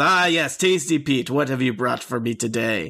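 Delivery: ostentatious, grand, showy voice. Voicing the Night Lord greeting a bandit from his throne: ostentatious Night Lord voice. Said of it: "ostentatious bandit captain ... stands up from his throne and says".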